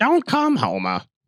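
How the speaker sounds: very high-pitched sitcom-wife voice. Answering a Homer joke, speaking to Homer: Edith Bunker voice. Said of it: "you sound like Edith Bunker".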